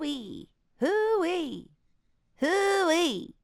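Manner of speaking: crunchy tightened voice. Trying out a character voice with others: crunchy voice. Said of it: "sort of like crunchy sound in it".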